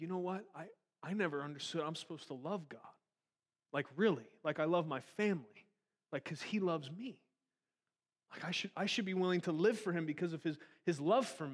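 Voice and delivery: voice on the verge of tears, almost crying. Retelling what a caller said on the phone: retelling someone near tears. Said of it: "this guy's almost crying on the phone".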